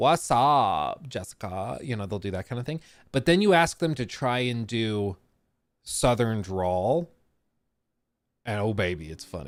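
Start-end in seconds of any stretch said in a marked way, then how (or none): 0.0-1.8 put-on California valley girl accent, much slower. Showing how british people try an american accent, in a valley girl accent. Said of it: "they'll do like Valley Girl, they'll do California".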